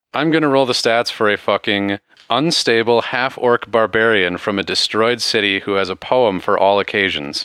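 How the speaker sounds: ordinary talk, nothing marked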